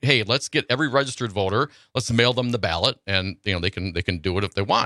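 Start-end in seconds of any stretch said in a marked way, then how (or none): none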